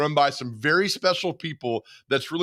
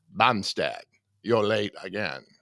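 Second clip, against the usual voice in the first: put-on creepy villain voice, lower; 6 semitones lower, 3 dB quieter than usual. Reading a comic strip as the grumpy boss: Hannibal Lecter voice. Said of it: "I am doing the voice of Hannibal Lecter".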